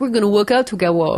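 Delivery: put-on babyish voice, show-off tone. Retelling a celebrity putting on a show at the gym: Arnold Schwarzenegger impression like baby voice. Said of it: "It's very similar to my baby voice".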